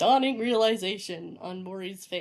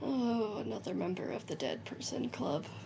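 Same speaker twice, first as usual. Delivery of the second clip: hushed, barely voiced mutter under the breath; 7 dB quieter than usual. A character mutters a remark half aloud: very quiet, under breath. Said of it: "very quietly, kind of like aloud, but like not aloud".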